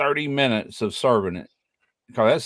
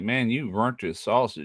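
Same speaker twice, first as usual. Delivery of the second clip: ordinary delivery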